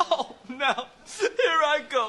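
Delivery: very high, slow, drawn-out voice, welling with tears. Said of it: "it makes me cry".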